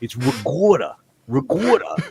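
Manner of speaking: put-on loud, swooping Brooklyn New York accent. Telling how a guy from brooklyn talks, brooklyn accent imitation. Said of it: "you talk to a guy from Brooklyn".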